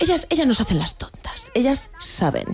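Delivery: vampish, seductive femme fatale whispered tone.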